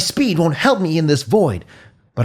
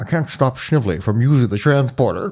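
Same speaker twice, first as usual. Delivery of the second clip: put-on Scottish film-star voice, lower; 6 semitones lower than usual. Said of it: "a Sean Connery impression".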